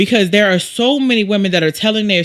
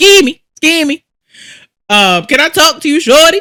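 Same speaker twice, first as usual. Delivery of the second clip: loud, high Baltimore-style holler; 7 semitones higher, 6 dB louder than usual. Explaining rejection killings, imitating a Baltimore catcaller calling to a passerby. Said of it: "y'all know how they do in Baltimore".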